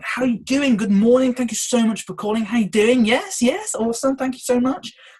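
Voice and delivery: very high, loud, upbeat, cheerful voice. Showing listeners how to greet a caller on the phone, smiling phone greeting. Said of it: "I want to pair with the phone".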